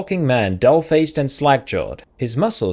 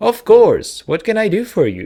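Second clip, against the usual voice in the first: pitched-up modern AI assistant voice, robotic; 7 semitones higher, 4 dB louder than usual. Voicing a character offering help to someone with questions, modern robotic assistant voice. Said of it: "sort of modern robotic assistant voice by instinct".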